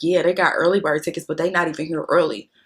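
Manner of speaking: dry, sneering, heavily sarcastic mockery. Retelling what a promoter said about their group, imitating him with a mock-sarcastic retort. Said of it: "very sarcastically says".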